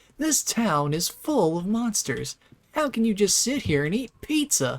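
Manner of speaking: mock angry scolding. Quoting James getting mad at Eddie sitting eating pizza: imitating James angrily. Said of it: "James gets so mad at him".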